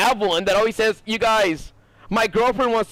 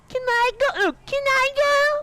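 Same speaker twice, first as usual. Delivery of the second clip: put-on very high, slow, drawn-out squeaky little kid voice. Retelling how little cousins talked, mocking little kids' squeaky voice. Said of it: "Squeaker Squad voice just comes from mocking".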